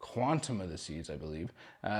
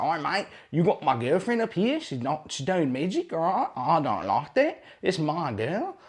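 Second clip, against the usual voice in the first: clumsy put-on Australian accent, loud and high; 8 semitones higher, 9 dB louder than usual. Retelling what a jealous boyfriend said before tackling a man, in a bad Aussie accent. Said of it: "that's a bad Aussie accent".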